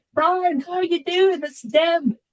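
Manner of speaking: put-on thick New Zealand accent, very high pitch. Act out the fourth cousin's surprise phone call to Brian, in Deb's very strong New Zealand accent. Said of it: "this very strong New Zealand accented voice".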